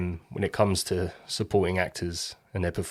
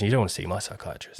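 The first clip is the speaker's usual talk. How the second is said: put-on suddenly calm voice, quieter; 5 dB quieter than usual. Retelling a film scene where the character suddenly calms down: imitating Chris Messina calming down. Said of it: "then he calms down and goes".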